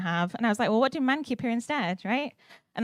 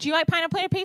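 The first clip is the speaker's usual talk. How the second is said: high, raised, shouted voice; 8 semitones higher than usual. Talking to someone they have just met, shouting at them. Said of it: "I'm shouting at you now".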